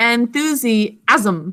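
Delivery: the word enthusiasm stretched out slowly.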